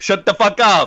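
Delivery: put-on loud Italian accent. Replying to another speaker about an independent artist: Italian Elon Musk voice. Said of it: "Italian Elon Musk voice".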